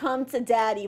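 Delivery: ordinary delivery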